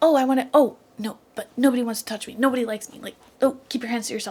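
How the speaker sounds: nervous, anxious, insecure, self-doubting character voice. Acting out a character's inner thoughts: imitating an insecure, anxious character. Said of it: "that's him being like".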